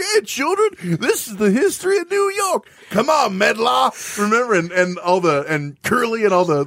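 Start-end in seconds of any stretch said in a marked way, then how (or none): 0.0-4.2 very high, squeaky cartoon character voice. Picturing the New York Knicks as a cartoon about New York history: cartoonish voice. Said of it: "being like, a cartoon".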